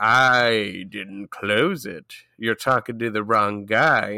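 play-acted cool, smooth-talking, slow, drawn-out "I". Retelling a trapped character's answer to his wife: imitating a smooth, cool reply. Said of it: "he's acting all smooth about it".

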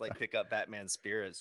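ordinary talk, nothing marked

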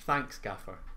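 mock grudging tone through gritted teeth. Thanking the gaffer after admitting being wrong: mock grudging, through gritted teeth. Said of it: "Through gritted teeth and hate and everything".

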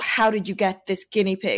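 ordinary talk, nothing marked

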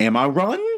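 question-like upward lilt at the end of "running". Trying an accent tip about raising the voice at line ends: rising pitch at the end. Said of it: "raise your voice towards the end of words".

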